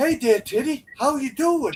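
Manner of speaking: put-on tough-guy voice with strong Boston accent. Riffing in a comedy bit, doing a Mark Wahlberg impression. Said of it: "fucking Mark Wahlberg".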